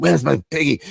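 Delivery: angry put-on French accent. Retelling a movie scene, quoting a woman in dominatrix outfit: angry French accent. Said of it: "angry French. She's like".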